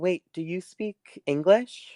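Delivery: timid, small, high little mousy voice. A voice speaks inside the listener's head like a psychic connection, quiet mousy voice. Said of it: "this really quiet and like kind of mousy voice says".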